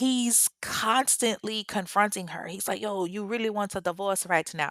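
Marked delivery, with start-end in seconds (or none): 2.8-4.7 put-on man's Jamaican-accented voice. Retelling Andy confronting Andrine about a divorce; Andy in a Jamaican accent. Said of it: "that was my Jamaican accent".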